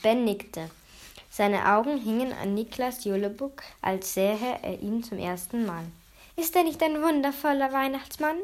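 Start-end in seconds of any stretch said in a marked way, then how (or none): 6.3-8.4 sweet, sugary fluting, high and quick. Narrator reading a story voices Mathilda praising Niklas Julebuck, fluting sweetly. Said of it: "flötete Mathilda".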